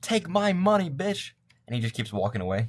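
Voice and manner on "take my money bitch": very high, drawn-out yell. While playing a game, yelling at the hotel, shouting. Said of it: "Like I'm shouting".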